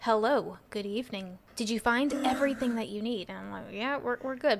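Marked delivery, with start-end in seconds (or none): 0.0-3.3 sinister, unsettling, creepy serial-killer voice. Retelling how a cashier at the register talked, in a put-on creepy serial-killer voice. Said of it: "he kind of talked like a serial killer".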